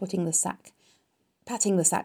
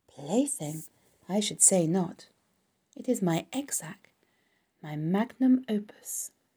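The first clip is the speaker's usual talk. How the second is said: ordinary delivery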